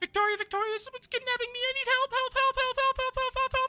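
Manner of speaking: frantic animal voice. Voicing Mochi, who cries out while being picked up: Mochi crying for help. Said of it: "and Mochi's just like".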